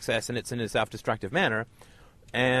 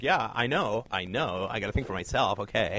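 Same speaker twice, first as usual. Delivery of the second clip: slow, dismissive, put-on Valley girl accent drawl; 3 semitones lower, 4 dB quieter than usual. Speaker acts out a listener's reply to being told to think for herself, valley girl accent. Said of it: "You're probably not a Valley girl, but weirdly, I can do the accent".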